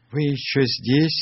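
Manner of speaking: trembling, high, quavering, shaky voice. A narrator reads a character's question, asked on a raft in the dark, in a trembling voice. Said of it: "дрожащим голосом спросил Сниф".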